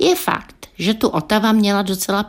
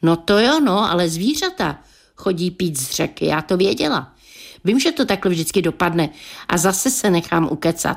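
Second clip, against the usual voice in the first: usual speaking voice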